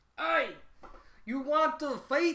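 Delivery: bad put-on Scottish accent, very high pitched. Speaker shows how they voiced characters while reading a scene, bad scottish accent. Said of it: "I for some reason gave them Scottish accents".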